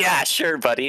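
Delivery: dismissive fake laughter. Retelling your reply to a man threatening to stab you, retelling laughing at him. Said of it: "like just laughing at him".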